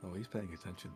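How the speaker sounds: imitated whisper. Retelling how he leans over to her mid-story: imitating a whisper. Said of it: "whispers to her".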